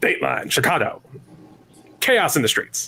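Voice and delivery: mid-Atlantic, transatlantic accent. Asked to say a dateline line, someone delivers it in a Mid-Atlantic accent. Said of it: "it's very Mid-Atlantic".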